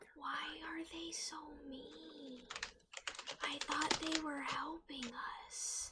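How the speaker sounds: hushed whisper. Whispering a question to a party member during a trek: whispering in character. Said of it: "whisper to Cloud and be like".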